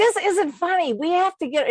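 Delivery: earnest, dead serious, slightly high voice. Retelling a husband's reaction to a fall, imitating someone speaking seriously. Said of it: "he was really serious".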